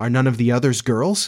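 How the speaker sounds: plain reading voice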